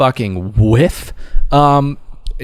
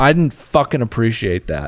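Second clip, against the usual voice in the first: play-acted, raised, angry outburst. Retelling a guest at the dinner table: imitating a raised voice. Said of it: "raises his voice at the dinner table and says".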